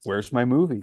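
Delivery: pointed, acted-out sarcastic tone. Retelling walking up to a CEO at a dealership opening: retelling own sarcastic remark. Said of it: "in my typical sarcastic mood".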